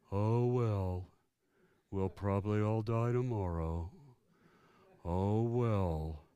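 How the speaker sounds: low, very slow, each word stretched, "well" drawn out. Illustrating the Eeyore syndrome with a quote: Eeyore voice. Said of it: "I do a pretty good Eeyore".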